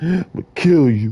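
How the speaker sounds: tearful, crying voice. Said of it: "He wasn't really crying, but I could kinda hear it".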